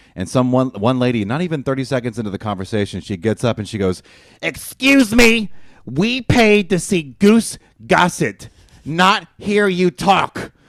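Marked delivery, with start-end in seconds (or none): 4.4-10.5 shrill, loud, drawn-out, high put-on New Jersey accent. Retelling what a lady said when she got up to interrupt, in a New Jersey accent. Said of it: "She sounds like she's from New Jersey".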